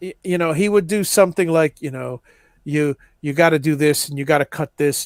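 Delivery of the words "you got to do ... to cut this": put-on flat deadpan delivery, lower pitch. Retelling a woodworking skit section, Eloy's deadpan delivery. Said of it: "it's his deadpan".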